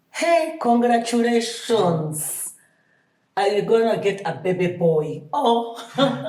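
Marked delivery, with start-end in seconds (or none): 0.1-5.2 put-on Ugandan accent. Retelling what the doctor at the scan said: imitating a Ugandan accent. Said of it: "with the Ugandan accent".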